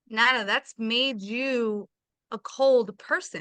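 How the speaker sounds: slow, mock gentle, affectionate, loving voice. Speaker retells what they told nana: retelling in a loving voice. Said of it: "I told her in a loving, like, voice".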